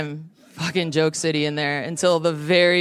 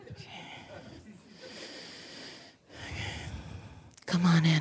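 soft-spoken therapist voice, almost whispered; 13 dB quieter than usual. Performing for an audience, doing a therapist impression. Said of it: "This is my impression of every therapist I've ever met".

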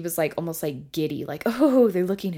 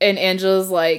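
normal talking voice

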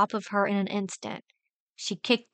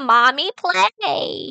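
loud, maniacal high-pitched cry; 6 semitones higher, 7 dB louder than usual. An attacker swinging knives at the narrator calls out, maniacal high-pitched voice. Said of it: "she said in a maniacally high-pitched mask voice".

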